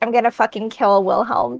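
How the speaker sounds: soft, grumbled mutter under the breath. Playing a character who reacts to news of a fight: muttering under her breath. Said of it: "mutters under her breath".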